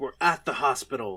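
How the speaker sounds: ordinary talk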